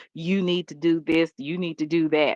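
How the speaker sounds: ordinary talk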